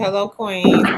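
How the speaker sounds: ordinary talk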